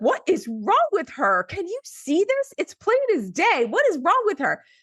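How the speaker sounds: very high, swooping, fed-up, exasperated rant. Retelling a doctor talking to the nurse outside the door: imitating a doctor's exasperated yelling. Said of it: "basically yelling at me without yelling at me directly".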